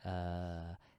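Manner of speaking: ASMR-style voice.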